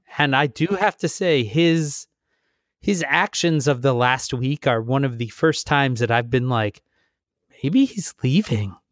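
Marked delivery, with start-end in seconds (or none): 7.6-8.7 mock dreamy, far-off daydreaming musing. Recounting someone's actions last week, the speaker retells a thought dreamily. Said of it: "That just was so dreamy the way you said that".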